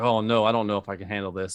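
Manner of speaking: plain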